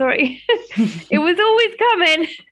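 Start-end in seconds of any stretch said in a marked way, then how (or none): 1.1-2.3 high, loud tearful laugh. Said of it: "I'm gonna cry now".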